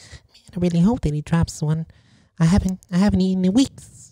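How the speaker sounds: small, high-pitched talking-mouse voice. Imitating how a talking mouse would sound: talking mouse voice. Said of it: "I think a mouse would sound more like".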